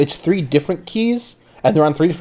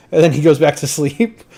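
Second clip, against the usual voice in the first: plain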